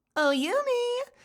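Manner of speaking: very high, sassy, feminine lilt, drawn out. Voice actor demonstrating one of her character's lines, little sassy. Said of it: "these little sassy".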